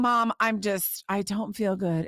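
put-on slow, small sick-child voice. Mother recalls her sick daughter complaining to her: imitating her little voice. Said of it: "In her little voice".

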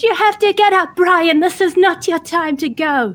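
very high, urgent calling-out yell. Urging a fallen friend to get up, yelling. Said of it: "she starts yelling in Elvish".

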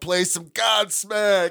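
rowdy, loud heckling yell. Retelling shouting requests at a cover band in a bar: imitating own yelling. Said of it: "I just kept yelling".

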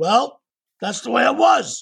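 gruff matter-of-fact grumble. Retelling a repair story, quoting Jack in Jack's gruff voice. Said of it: "in gruff voice".

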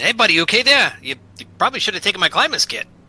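concerned, friendly, high-pitched, loud calling out.

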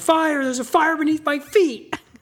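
mock shrill, high, loud, stretched-out alarmed yell. Retelling what the other speaker yelled about a fire: imitating someone yelling. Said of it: "you started yelling".

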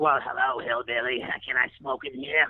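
put-on old lady voice with New Jersey accent. Retelling what an eighty-nine-year-old passenger said: imitating an old New Jersey lady. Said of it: "eighty-nine-year-old lady from New Jersey".

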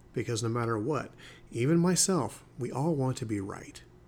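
dramatic, pointed pause, then landing the words.

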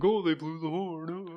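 snarky, high, drawn-out sarcastic tone. Teasing a friend by imitating his sarcastic voice about the horn. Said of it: "your little sarcastic voice".

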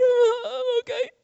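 very high, teary, crying whimper. Recounting being pulled from the water by his cousin, retelling a whimper. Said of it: "And I whimpered".

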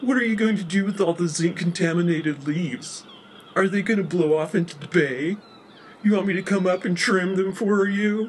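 California surfer dialect. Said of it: "with California surfer dialect".

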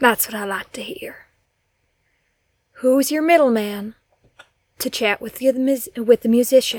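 cold, menacing, hardened, threatening interrogator voice. Role-playing an interrogator questioning someone who begs not to be killed, cold menacing interrogator.

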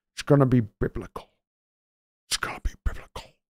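put-on whispery Irish accent spoken out of the mouth's side. Reacting to a viewer's comment by impersonating an actor: actor impression with Irish tone. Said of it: "with an Irish tone".

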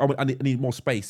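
plain

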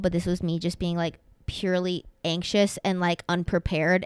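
ordinary talk, nothing marked

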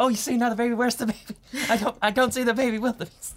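very high-pitched, all-excited, babbling chatter. Retelling what tram guide Alex said on seeing a baby: imitating excited Alex. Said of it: "gets all excited when he saw the baby".

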